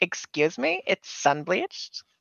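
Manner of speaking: put-on drawn-out teenage way of talking. Mocking another player's line in a teenager voice: imitating a teenager. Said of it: "you sound like a, teenager that's just like".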